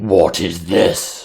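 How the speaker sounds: loud voiced ghoul creature. Voicing a ghoul that spots the party while feasting: ghoul voice. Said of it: "one of them says".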